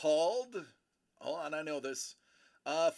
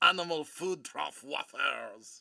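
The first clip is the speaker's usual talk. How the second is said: outrageous exaggerated French accent. Speaker taunts a listener, in an outrageous french accent. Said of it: "Why else would I speak with this outrageous accent?".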